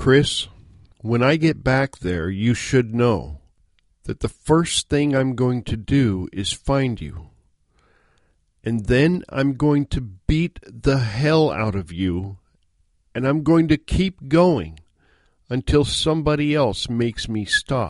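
slow, measured menace, each word weighed. Retelling a phone reply to Chris after his joke, in a very low, slow, quiet voice. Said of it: "in a very low, slow, quiet voice".

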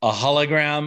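play-acted, scoffing, disdainful, insolent disbelief. Retelling Seven of Nine objecting to a hologram: insolent attitude. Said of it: "She says it with such, like".

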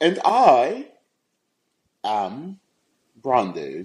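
bad, fake, sing-song put-on British accent. Introducing himself on the show, a co-host speaks in a put-on british accent. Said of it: "I wanted to be British".

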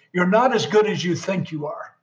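normal talking voice

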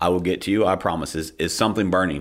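acted, very calm, steady, even voice. Retelling own reply to a panicked person: retelling own calm reply. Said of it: "And I very calmly said".

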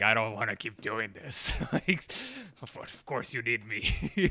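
gurgling, gargled put-on voice. Describing an old character's scene, speaker acts out his line in a gargly voice. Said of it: "it's like with his gargly voice".

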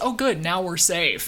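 ordinary delivery

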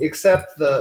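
ordinary delivery

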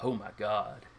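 said under one's breath. Voicing a character who left his mic on: muttered under breath. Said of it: "almost under his breath".

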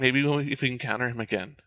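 whispered speech. A player voices their character's reply, whispering back. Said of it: "I'll whisper back".

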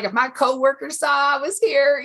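put-on heavy Texan trucker accent. Quoting a Texan man on a call about buying a painting, in a thick Texas accent. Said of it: "like with a really thick accent".

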